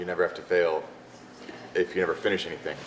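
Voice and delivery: ordinary delivery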